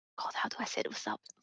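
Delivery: fast whispered aside, to oneself.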